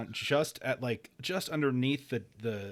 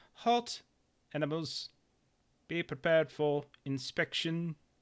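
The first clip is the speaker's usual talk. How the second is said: pitched-up, machine-like robotic announcer voice; 5 semitones higher than usual. Describing the scene to the players as a voice comes over, robotic voice. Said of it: "like that that robotic voice comes over".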